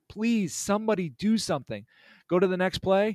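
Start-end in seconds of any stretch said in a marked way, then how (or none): 0.2-1.9 put-on yelling, higher. Retelling a bad call while watching a play: retelling screaming at the screen. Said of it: "I am screaming at the screen".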